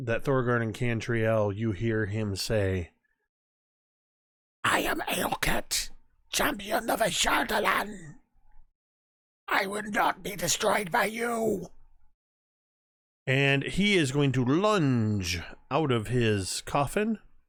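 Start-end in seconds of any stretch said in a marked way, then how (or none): 4.6-11.7 raspy ancient voice, pitched up. Game master voices a figure in a coffin addressing the players, in Aelket's raspy voice. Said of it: "you hear in this raspy voice".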